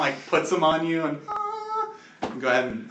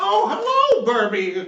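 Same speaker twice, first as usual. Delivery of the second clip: put-on grizzled old granny voice, higher and louder; 11 semitones higher, 5 dB louder than usual. Voicing a grizzled old lady healer greeting a player: grizzled old lady voice. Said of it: "a grizzled old lady and she's like".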